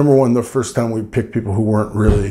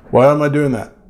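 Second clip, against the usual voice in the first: normal talking voice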